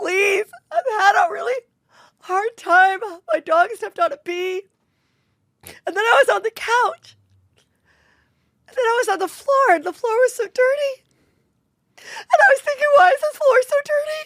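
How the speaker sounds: very high, weepy, tearful pleading tone. Acting out a mock trial as the crying witness: imitating Amber Heard crying on the stand. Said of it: "I'm gonna do a little bit of Amber".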